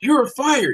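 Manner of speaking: shrill, very high-pitched screaming. Retelling a sitcom scene where a boss fires someone: imitating a boss screaming. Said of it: "a boss screams at him".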